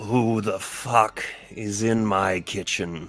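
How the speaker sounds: rumbling put-on creature voice. Voicing a being hidden inside the bread, in a rumbly voice. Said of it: "in just sort of like this rumbly voice".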